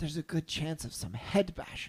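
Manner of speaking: soft-spoken voice. Speaking to another character in a tabletop game, speaking softly.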